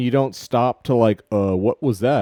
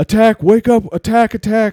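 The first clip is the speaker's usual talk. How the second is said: shrill, urgent, high, loud alarmed shouting; 10 semitones higher, 6 dB louder than usual. Game master voicing the guard up there, guard raising the alarm. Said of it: "the guard up there's like".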